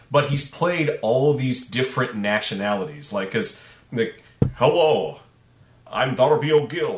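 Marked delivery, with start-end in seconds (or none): 4.5-7.0 slow, deliberate, signature film-star voice drawl. Joking that every role sounds the same: Sean Connery voice. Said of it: "it's the Sean Connery voice".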